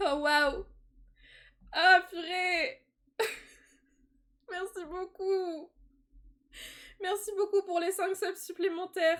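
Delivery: crying while talking. Streamer thanks viewers for new subscriptions, crying while talking. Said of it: "C'est bon, je chiale".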